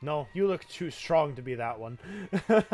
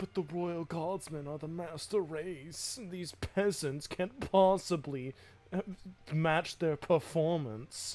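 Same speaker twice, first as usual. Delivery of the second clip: mock pompous voice, higher pitch; 3 semitones higher, 4 dB quieter than usual. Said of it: "he sounds so pompous".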